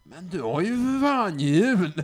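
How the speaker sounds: acted shouted remark. Retelling what a man shouted, pointing at her wheelchair; retelling a shout. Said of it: "pekade på min rullstol och skrek".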